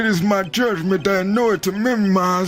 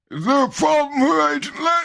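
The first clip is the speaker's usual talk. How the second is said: put-on old man voice, higher; 7 semitones higher than usual. Voicing a game character's line: old man voice. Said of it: "What's that old man voice?".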